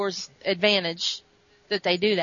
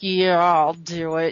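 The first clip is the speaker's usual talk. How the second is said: acted speech through gritted teeth; 3 semitones lower, 3 dB louder than usual. Retelling a story, a character agreeing to carry a message, through gritted teeth. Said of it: "And through gritted teeth".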